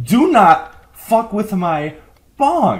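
slow, drawn-out, full-throated, booming shout. Warning everyone across the land not to mess with the bong: shouting. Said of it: "I'm shouting this over the entire land".

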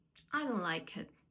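pitch drops down on final it. Ukrainian lesson on English statement intonation: falling tone on final it. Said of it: "Або низхідна, донизу".

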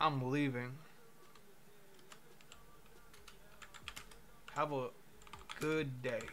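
angry, irritated delivery. Walking out on a chatbot in a roleplay: angry. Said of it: "Says in an angry way".

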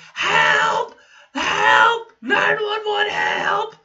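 put-on very high-pitched child's screeching yell. Telling a story about driving off with a kid on the windshield: retelling a kid's screeching yell. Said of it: "just screeching".

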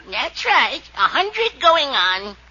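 put-on elderly woman's voice, played up. Answering the host about being a hundred: put-on old lady voice. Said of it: "I wonder how I sound as an old lady".

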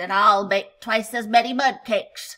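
snorting. A narrator reads the warthog's line in the animals' baking contest, snorting. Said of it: "snorted the warthog".

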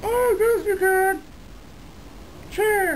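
very high, drawn-out ventriloquist-dummy voice. A ventriloquist's dummy answers its handler's question, in a ventriloquist dummy voice. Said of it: "It's my brand new Navajo dummy".

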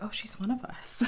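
hushed conspiratorial whisper.

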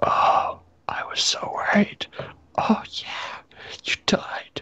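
moaned, lamenting, groaning delivery. Reading a vampire's line aloud from a story, moaning. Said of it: "was that your version of moaning?".

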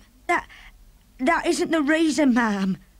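high, trembling, terribly quivering voice. The maid answers the woman she calls ma'am, voice quivering terribly. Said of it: "The maid's voice was quivering terribly".

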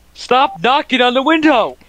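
shrill, very high-pitched yell. The speaker yells at a robin that keeps knocking on the window, yelling at a bird. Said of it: "I'm gonna yell at this bird again".

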